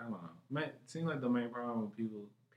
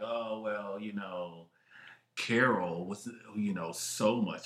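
very slow, snobbish, pretentious musing drawl; 2 semitones lower, 4 dB louder than usual. Mocking someone who likes pretentious movies, mock pretentious movie fan. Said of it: "if you like a pretentious and you're just like".

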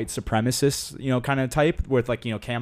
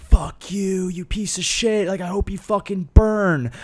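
aggressive, raised, shrill, abusive screaming; 7 semitones higher, 5 dB louder than usual. Retelling how protesters screamed at Trump supporters: imitating protesters screaming. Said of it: "they'd be screaming".

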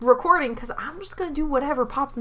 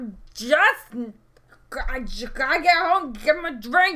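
put-on acted drunk and crazy. Playing a character who fell into a river: acting drunk and crazy. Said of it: "I'm trying to be drunk crazy".

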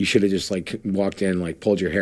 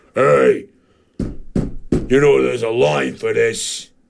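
put-on cranky old-man voice, much slower; 5 semitones higher, 5 dB louder than usual. Retelling an old man who tapped them on the shoulder: imitating a cranky old man. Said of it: "this 1,000-year-old dude".

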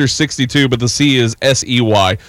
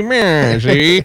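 tough, gangster-style cartoon baby voice. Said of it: "that little cartoon baby".

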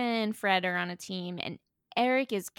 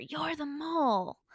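put-on screaming, flung out, pitched up; 6 semitones higher, 3 dB quieter than usual. Retelling how Corbin turned on a teammate: imitating someone screaming. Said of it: "Corbin immediately screams at her".

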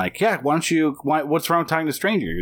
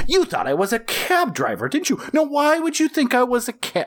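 mock hammy over-the-top villain voice, higher pitch; 12 semitones higher than usual. Retelling the killer confronting people in cars: imitating an over-the-top killer. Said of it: "an over-the-top".

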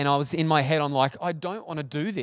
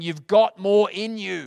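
mock, put-on screaming voice; 4 semitones higher, 5 dB louder than usual. Speaker recalls the rowers' coach at early training, retelling a coach screaming. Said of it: "he's screaming at them saying".

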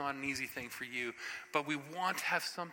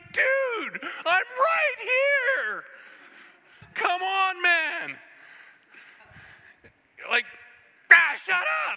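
mock loud, swooping, very slow, dragged-out flip-out; 15 dB louder than usual. Retelling the angel Gabriel's reaction, Gabriel flipping out, retold. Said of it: "the angel Gabriel flipped out like".

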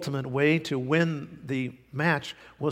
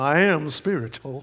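mock eerie, otherworldly, mysterious voice; 3 dB louder than usual. Mocking people who say they're not into church but spiritual, mock Twilight Zone spooky voice. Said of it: "they always say it like they're in twilight zone".

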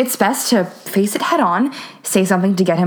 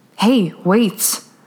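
fed up, exasperated, patience worn thin. Narrator voicing a man grabbing her arm to stop her walking, exasperated. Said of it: "He sounds exasperated".

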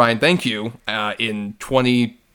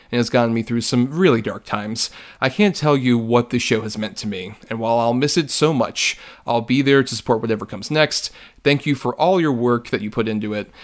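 ordinary talk, nothing marked

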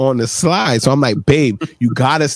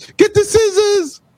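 laughing hysterically, very high, words choked by laughter. Retelling a mother-in-law's words as she lay on the stairs: imitating someone laughing hysterically. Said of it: "on the stairs dying laughing".

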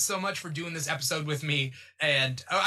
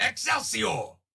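gruff, aged voice, exclaimed; 4 semitones higher than usual. Saying he is always down for the voices, then an old gruff Stan Lee impression. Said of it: "That's my Stan Lee".

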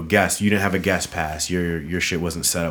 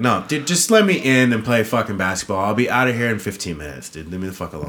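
ordinary delivery

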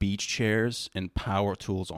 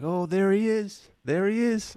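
put-on woman's voice, much higher, louder; 12 semitones higher, 5 dB louder than usual. Telling how a woman greeted him from her open door, imitating her voice. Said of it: "That's how she said it?".

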